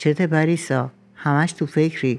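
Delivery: ordinary delivery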